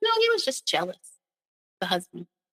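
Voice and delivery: put-on very nonchalant, casual, swooping, offhand delivery. Retelling her mom's reply about a murdered friend: imitating someone speaking nonchalantly. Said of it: "very nonchalantly".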